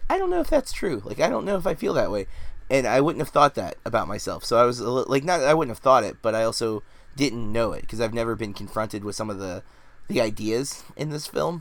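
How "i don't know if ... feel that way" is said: doubtful reaction, pitched high. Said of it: "I was kind of like".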